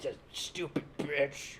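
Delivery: put-on terrible Irish accent. Joking about gossip with friends, in a bad Irish accent. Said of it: "This is my Irish accent".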